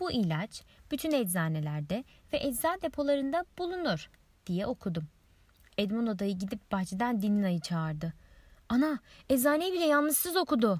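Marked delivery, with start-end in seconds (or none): 8.7-10.8 high-pitched, loud shouting. Narrating uncle Edmundo calling Dinina in from the garden: shouting. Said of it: "diye bağırdı".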